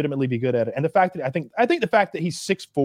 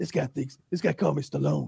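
put-on sleepy-sounding tough guy voice. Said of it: "Steven Seagal goes".

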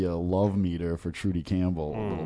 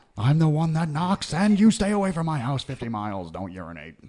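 menacing, threatening drug-lord voice, pitched up; 7 semitones higher, 3 dB louder than usual.

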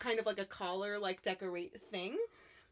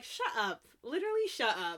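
ordinary delivery

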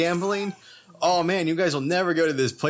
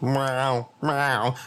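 put-on creature cry, lower; 3 semitones lower than usual. Doing a joke impression of a tauntaun: tauntaun impression. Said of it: "my impression of a tauntaun".

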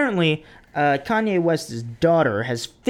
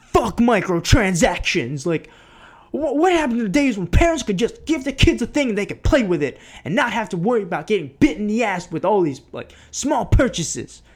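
worked-up, high, angry rant, pitched up; 5 semitones higher than usual. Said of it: "It's my [name] impression".

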